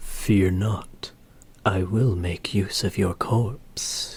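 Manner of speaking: low, breathy whisper. Showing what a character sounds like, low breathy whisper.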